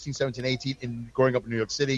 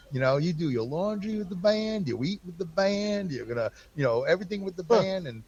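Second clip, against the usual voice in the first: put-on Southern accent, pitched higher; 6 semitones higher than usual. Retelling what Hoot said when offering work at Florida Custom Coach: imitating Hoot's Southern accent. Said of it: "he had a real Southern accent".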